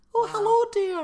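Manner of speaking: very high, shrill, slightly loud Scottish voice. Doing Mrs. Doubtfire after learning she is Scottish: Mrs. Doubtfire voice. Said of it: "Scottish. Is she?".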